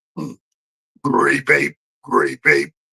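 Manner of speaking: rough, creaky, croaked-out voice. Retelling bugging an older brother as a kid: Grape Ape voice. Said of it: "doing the Grape Ape voice".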